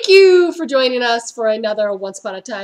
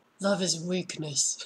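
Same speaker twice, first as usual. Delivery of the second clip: low and hushed delivery; 7 semitones lower, 14 dB quieter than usual. Recapping a TV episode, the speaker voices a character's line, sounding like Snape. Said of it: "I sound like Snape".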